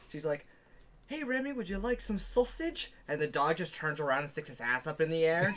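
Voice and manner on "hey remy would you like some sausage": very high put-on Scottish woman's voice. Retelling a video of a woman hosting her dog show: imitating a Scottish woman. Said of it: "Scottish or something like that".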